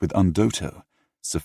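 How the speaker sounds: plain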